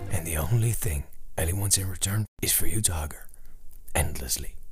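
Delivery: hushed whisper. Describing Elly to the listener, whispering. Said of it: "Why are we whispering?".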